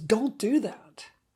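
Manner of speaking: angry disgust.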